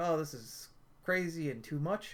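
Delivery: plain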